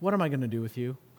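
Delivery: muttered under the breath. The speaker mimics a parent dealing with a foolish kid, muttered under the breath. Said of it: "The under-the-breath phrase from your mom or your dad".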